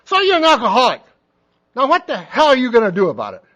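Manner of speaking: very loud, swooping, shouted yell. Retelling how an old man jumped up in front of people: imitating someone yelling. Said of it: "he's yelling at me".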